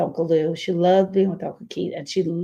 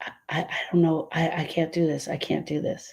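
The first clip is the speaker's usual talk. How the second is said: mock-tearful crying voice, quieter; 5 dB quieter than usual. A mother retelling her daughter's frightened words, retelling tearful speech. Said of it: "through a million tears".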